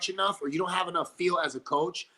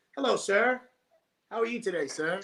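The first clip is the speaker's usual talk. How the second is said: mocking, put-on, suddenly polite schoolboy voice; 2 semitones higher than usual. Teasing the listener about the principal sitting down, the speaker imitates Johnny Spin rate, mock-polite. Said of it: "your posture gets up".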